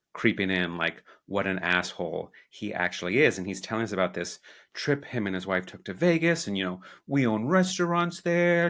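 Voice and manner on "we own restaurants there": put-on New York accent, very high. Quoting a guy who owns restaurants in Vegas, put-on New York accent. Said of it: "I do a New York accent".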